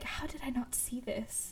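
soft, stunned, disbelieving whisper. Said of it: "I read them and I'm like".

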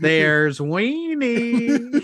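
put-on high small girl's voice, weenie stretched and drawn out. Joking about movie nudity, saying the line like the Poltergeist girl: Carol Anne voice. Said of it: "say it like the girl in Poltergeist".

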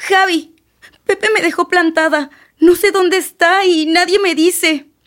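tearful speech, crying while talking. In a drama, a woman tells Javi that Pepe stood her up, crying while talking. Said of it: "¿Por qué lloras".

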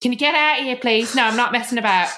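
high bad Cockney accent. Retelling someone banging on the diary room door: bad Cockney accent. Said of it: "I really can't do a fucking Cockney accent".

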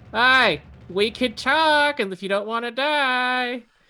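shrill, very loud, high-pitched shout with "die" stretched. A player using a bonus action in a game, yelling out. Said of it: "I'm just going to yell out".

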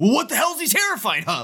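mock, very high, furious, angry scream. Recapping a scene where Luke yells about a terrified kid, imitating Luke screaming. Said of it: "Luke just like screaming at him".

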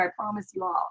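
normal talking voice

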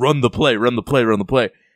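insistent, urgent call, repeated over and over. Retelling how Mike Malone yelled at a player from the sidelines: imitating Mike Malone yelling. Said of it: "was just yelling at Jokic".

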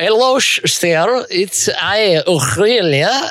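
put-on slow, unhurried Portuguese accent. Acting out Aurelia bringing tea to an Englishman, a Portuguese accent as Aurelia. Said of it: "doing a great Portuguese accent".

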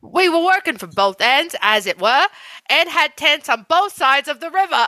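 deliberate, slow, put-on British accent. Reading a text aloud after agreeing to try: attempted British accent.

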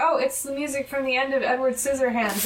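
plain

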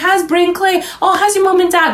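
put-on very high Scottish accent, pitched way up. Telling someone how a friend's mom greets her, imitating friend's Scottish mom. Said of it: "she just talks like this".

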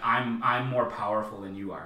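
ordinary delivery

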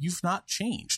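play-acted disgusted voice. Retelling a character's line from a movie scene, imitating a disgusted tone. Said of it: "just with visible disgust in her voice".

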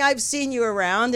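normal talking voice

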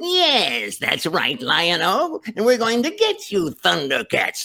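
very high, swooping cartoon villain voice, "yes" stretched. Recalling doing Lion-O and Jackal Man straight through: Jackal Man voice. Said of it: "who's one of the voices I did too".

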